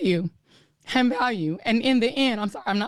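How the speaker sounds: tearful voice. Speaking about her show's value while apologizing: crying. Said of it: "I try not to cry on T V".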